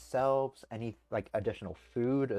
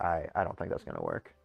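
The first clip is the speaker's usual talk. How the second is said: ordinary delivery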